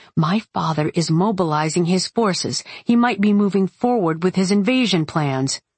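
ordinary delivery

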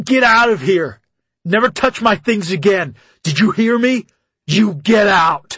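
very loud, screaming, shrieking drill-sergeant voice. Reading a story, the coach confronts the narrator: screaming, shrieking sergeant voice. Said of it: "Screaming, shrieking sergeant voice".

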